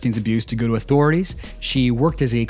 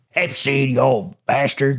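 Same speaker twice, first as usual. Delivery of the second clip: put-on pirate voice. Acting out Lynn Forrester replying to a pitch: Lynn Forrester impression. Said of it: "That's my Lynn Forrester impression".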